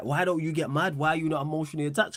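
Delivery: ordinary talk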